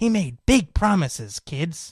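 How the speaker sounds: put-on sing-song storybook read-aloud voice for young kids. Imagining someone reading to first or second graders, storybook reading voice. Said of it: "reading to a bunch of first or second graders in that voice".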